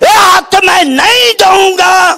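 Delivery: shouted defiantly. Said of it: "ਹੁਣ ਮੋਦੀ ਕੀ ਕਹਿੰਦਾ?".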